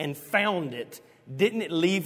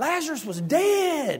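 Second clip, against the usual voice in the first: put-on very high preacher scream, held very long; 10 semitones higher, 3 dB louder than usual. Retelling a street preacher on a platform: imitating someone screaming. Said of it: "he was screaming, preaching about Lazarus".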